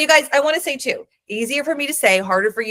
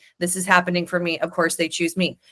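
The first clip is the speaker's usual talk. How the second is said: monotone, flat, emotionless deadpan with no feeling; 3 semitones lower, 3 dB quieter than usual. Repeating a self-affirmation to show how it sounds, flat with no emotion. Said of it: "I don't even have any emotion as I'm saying it".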